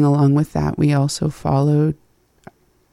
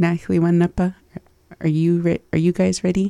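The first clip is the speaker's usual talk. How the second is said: usual speaking voice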